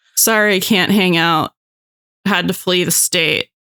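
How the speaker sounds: ordinary delivery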